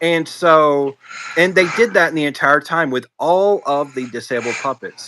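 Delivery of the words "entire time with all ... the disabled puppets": ordinary talk, nothing marked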